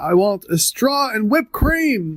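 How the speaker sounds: mock deliberate, high, drawn-out shout, rising at end. Retelling a scene where a customer calls out an order: imitating someone shouting. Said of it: "the guy shouts out".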